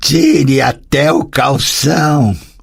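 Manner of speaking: hoarse, husky, slow, alluring seductive voice. Narrator reading the marquise's reply to a man, in a husky, seductive voice. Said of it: "disse em voz rouca e sedutora".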